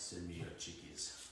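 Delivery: put-on very deep, soft voice. Answering a viewer who wants to see the hens and chicks colors: put-on deep voice. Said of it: "She's bringing out the deep voice".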